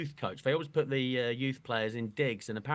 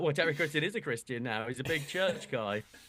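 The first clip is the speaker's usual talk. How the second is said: plain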